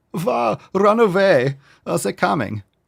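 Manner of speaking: very high-pitched put-on German accent. Joking about hiding meat from invaders, german accent. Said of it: "I just turned into a German guy".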